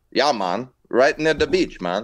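put-on Jamaican accent. Friends joking about accents, one answers in a Jamaican accent impression. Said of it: "I was doing Dread".

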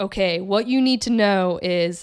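big, slow, booming male voice. Retelling a lucid dream where a voice answers the speaker's question: big booming male voice. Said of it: "this big booming voice is like".

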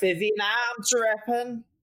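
put-on really strong Liverpool accent. Imitating a woman talking to vivian, in a strong liverpool accent. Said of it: "she has this like really strong Liverpool accent".

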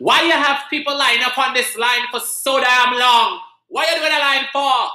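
put-on very high West Indian accent yell. Retelling how the mother yelled at a guy: imitating mother yelling in west indian accent. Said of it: "my mother yelled at the guy".

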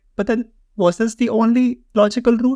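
high, skeptical, incredulous mock tone pushed up in disbelief. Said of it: "I'm like".

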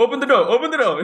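high, loud scream, same words repeated. Retelling a man screaming at the speaker before reaching the car; imitating someone screaming. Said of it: "He's kept screaming at me".

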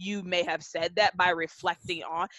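ordinary talk

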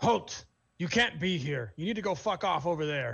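feminine orc voice, hollering out loudly. In a game, an orc woman by a fire yells at an approaching stranger, female orc yelling. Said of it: "the female is definitely an orc. / And you hear a feminine voice kind of yell this out loud as she nudges the figure next to her".

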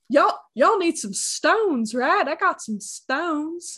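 put-on over-the-top country accent. Imitating how he talks, the speaker does an exaggerated southern accent. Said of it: "It's really exaggerated".

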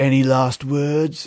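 bad, awful, fake put-on English accent. Retelling a scene, the speaker quotes an english mercenary in an awful accent. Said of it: "the mercenary accents were fucking awful".

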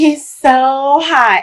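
giddy, high, giggly middle-schooler gush, hot drawn out. Telling someone they sound ridiculous, imitating them in a middle-schooler voice. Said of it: "you sound like a middle schooler who's like".

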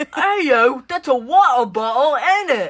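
put-on British accent. Mocking british people for a laugh: mock british accent. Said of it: "British people be like".

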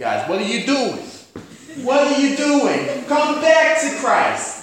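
high, slow New York accent.

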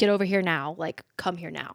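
put-on panicked, pleading voice. Retelling a woman calling her ex-husband after finding a body: imitating a panicked call. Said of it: "she's just panicked".

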